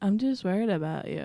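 put-on flat monotone. Speaker imitates how another person talks to her: mimicking a monotone. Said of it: "everything is so monotone".

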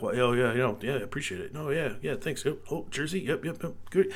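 put-on calm voice. Retelling how the star player answered a bizarre request, retelling a calm reply. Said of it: "he's just like calmly like".

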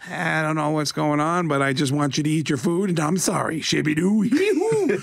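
put-on goofy comedian voice. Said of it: "Adam Sandler impression".

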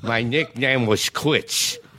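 put-on punch-drunk boxer voice. Acting out a comedy routine as the fighter: punch-drunk fighter voice. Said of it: "I'm talking like this".

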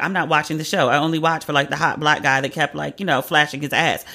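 normal talking voice

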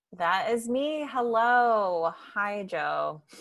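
glum, downcast voice with a drawn-out hello. Guest greeting host Joe over Zoom, sounding down in the dumps. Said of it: "You sound like you're down in the dumps".

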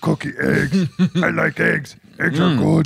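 put-on monster voice. Called a cookie monster for eating on the podcast, answering in Cookie Monster voice. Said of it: "a podcast with a cookie monster".

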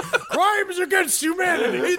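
play-acted, very high-pitched screeching scream. Describing a man in a Michael Myers shirt, the speaker is imitating someone screaming.

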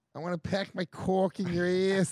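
Boston accent, put on. Doing an accent on request, Boston accent. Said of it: "Let's hear your fucking Boston".

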